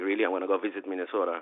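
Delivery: plain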